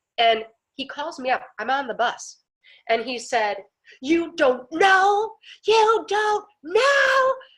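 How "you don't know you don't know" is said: put-on very high, loud, drawn-out, rising distress. Retelling a man's phone call while on a bus, imitating an upset man. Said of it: "And that's exactly how he sounded".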